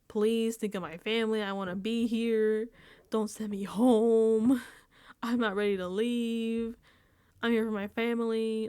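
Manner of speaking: crying, tearful pleading with drawn-out "home". Retelling a house guest begging not to be sent home, imitating someone crying and pleading. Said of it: "Adrian is crying and like pleading".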